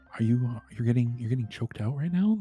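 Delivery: quiet ASMR-style voice. Asking another speaker a teasing question: quiet asmr voice. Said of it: "are doing A S M R voice".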